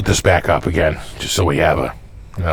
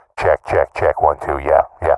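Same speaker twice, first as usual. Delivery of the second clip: tinny, lower, telephone-filtered voice; 4 semitones lower than usual. Testing a megaphone voice effect: telephone call sound. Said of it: "That sounds like a telephone call".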